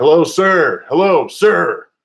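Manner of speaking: high-pitched yell, calling out as if from far away. Describing a woman calling to the camper from far away, imitating a woman yelling. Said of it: "she came up like yelling like".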